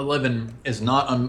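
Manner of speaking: ordinary delivery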